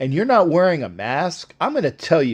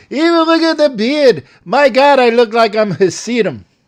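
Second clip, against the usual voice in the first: put-on old man's kvetching, complaining voice, raised and high; 7 semitones higher, 5 dB louder than usual.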